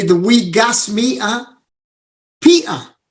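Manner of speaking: put-on Scottish accent. Retelling a teammate's nickname for him: imitating Stevie's Scottish accent. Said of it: "to imitate it, the Scottish accent".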